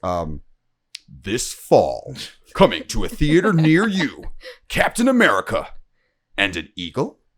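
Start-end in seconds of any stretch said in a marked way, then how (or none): 1.2-7.1 slow, film trailer narrator announcer voice. Speaker imitating the dude who does movie trailer voices: movie trailer voice. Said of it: "the movie trailer voices".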